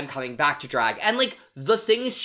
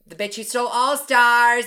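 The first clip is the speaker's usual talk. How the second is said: very nasal, high, squeaky helium voice; 6 semitones higher, 6 dB louder than usual. Have a try at a very specific voice for the others, a very nasal, helium-like voice. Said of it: "Oh, it's this voice. She talks like this the entire time".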